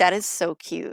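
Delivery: ordinary delivery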